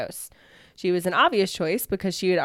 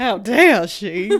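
very loud put-on Southern accent; 2 semitones higher, 8 dB louder than usual. Retelling what the town thought of an elderly woman, in a put-on southern accent. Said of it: "I love how we put on our southern voices".

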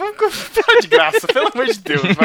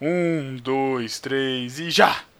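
put-on deep voice, much lower and quieter; 12 semitones lower, 7 dB quieter than usual. On a game stream, counting down to act out the emotion Tan explained, deepened put-on voice. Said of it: "Não precisava também engrossar a voz".

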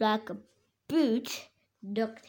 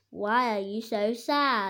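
ordinary delivery

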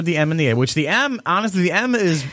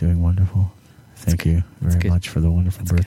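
put-on public radio host voice, much lower; 8 semitones lower than usual. Playing a mock radio interview, answering the greeting in a public radio host voice. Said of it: "I totally feel like I'm on public radio right now".

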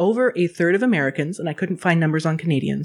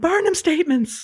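very high-pitched screaming; 11 semitones higher than usual. Retelling how Ashwin yelled at the TV during MasterChef, imitating Ashwin screaming. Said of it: "Ashwin just started screaming".

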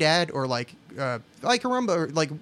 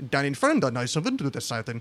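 odd put-on German narrator voice, lower; 2 semitones lower than usual. Imitating how german dubs read on-screen church sign gags, weird german narrator voice. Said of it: "say it in this weird narrator voice".

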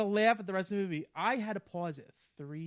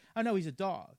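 plain

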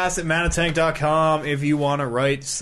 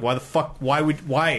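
ordinary talk

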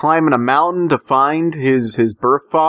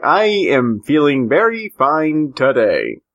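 very slow, mechanical robot voice. Telling the other speaker how they answered a question: imitating a robot voice. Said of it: "you were like".

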